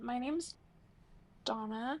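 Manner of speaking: pitch rises at the end of "Donna". Someone joining the conversation introduces themselves by name, with rising question intonation. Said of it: "went up with a question mark at the end".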